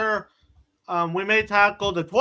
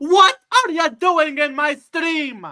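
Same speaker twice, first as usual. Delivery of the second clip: ogre voice, pitched up high; 7 semitones higher, 4 dB louder than usual. Doing an impression on their stream, Shrek impression. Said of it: "let me do the best Shrek impression".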